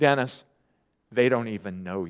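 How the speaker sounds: very low, soft, condescending, patronizing tone. Dennis quotes a woman's reply to him, in a mock-patronizing voice. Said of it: "in her patronizing voice".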